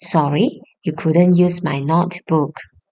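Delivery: ordinary talk, nothing marked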